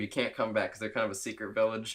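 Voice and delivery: ordinary delivery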